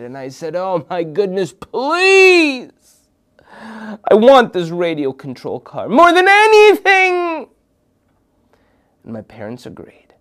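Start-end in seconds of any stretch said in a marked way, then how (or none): 0.5-7.5 high, loud, whiny desperate pleading. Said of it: "I begged and I pleaded".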